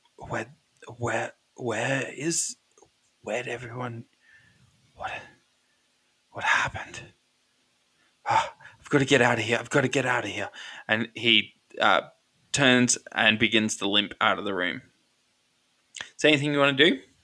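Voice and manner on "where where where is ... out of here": soft, hushed, confused, bewildered muttering. Voicing a dazed character who limps from the room: muttering confusedly.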